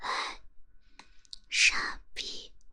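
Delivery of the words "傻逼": breathy whispering. Whispering in the listener's ear as announced, breathy whisper. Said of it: "那我就用气声在你耳边骂骂你".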